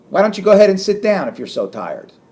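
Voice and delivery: aggressive sarcasm. Showing how saying the opposite can embarrass someone, aggressive, sarcastic. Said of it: "I'm saying it in an aggressive way. I'm saying it in a sarcastic way".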